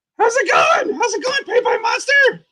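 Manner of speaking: very high, shouted puppet voice.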